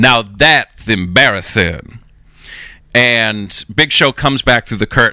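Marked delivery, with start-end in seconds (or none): 0.0-2.0 put-on character voice with a dusty texture. Retelling the line that Big Show improvised, in a Dusty Rhodes voice. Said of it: "he does it in a dusty voice".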